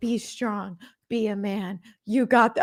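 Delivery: put-on encouraging pep-talk tone, breaking off abruptly. Retelling how a reality show contestant gave her partner a pep talk: imitating a pep talk. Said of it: "She was like".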